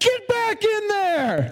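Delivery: high-pitched, drawn-out, angry yelling. Retelling yelling at the animals at the door to send them back, retelling a yell. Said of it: "I would just yell at them".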